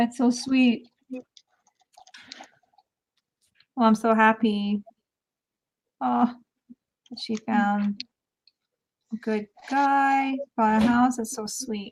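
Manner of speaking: teary, moved, close to tears. Reacting to sweet news about her, tearing up. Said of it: "tearing up right now".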